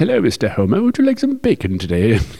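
put-on pig voice with high, sing-song British accent. Describing a scene where a pig in a top hat comes along, pig with British accent. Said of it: "he's got a British accent".

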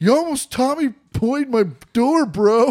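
mock rattled, scared, high, loud, worked-up blurt. Retelling what was said to a kid who nearly hit the car door: imitating own worked-up, scared outburst. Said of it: "worked up and scared".

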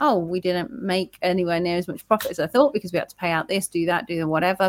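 ordinary talk, nothing marked

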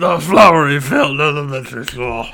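grumpy, guttural bulldog voice. Repeating a phrase after being asked what that was: Winston Churchill impression. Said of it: "It sounded just like a bulldog".

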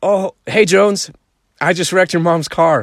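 put-on breezy casual voice. Retelling someone admitting he wrecked the car: imitating a casual smiling tone. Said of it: "He smiles like he's casually reading the weather forecast".

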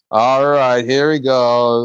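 put-on drunk heckler voice. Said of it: "he's kinda like".

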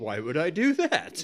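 mock, very slow, arrogant, dismissive, drawn out. Retelling what the building's owner said in a movie: imitating a dismissive jerk. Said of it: "He kinda said it like an asshole".

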